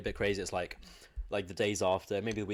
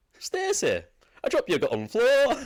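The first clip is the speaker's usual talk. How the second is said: put-on Leeds accent, much higher and louder; 8 dB louder than usual. Retelling what you heard called out to Stacey, a cleaner, as you were just rising, in a put-on Leeds accent. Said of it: "like a Leeds accent".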